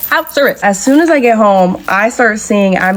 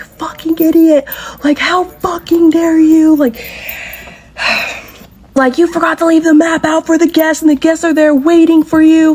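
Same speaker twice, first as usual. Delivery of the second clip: put-on high, raging, abusive furious screaming; 7 semitones higher than usual. Retelling a man screaming at her over the phone, retelling his screaming. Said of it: "he's screaming at me".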